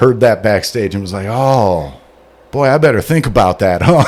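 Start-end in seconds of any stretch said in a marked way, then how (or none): none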